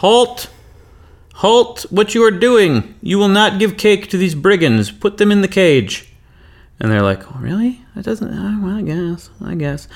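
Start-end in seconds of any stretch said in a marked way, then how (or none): 0.0-6.1 put-on yelling voice, much higher. Narrating a game scene, the storyteller voices Susan from her tower, yelling halt. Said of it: "she immediately yells out".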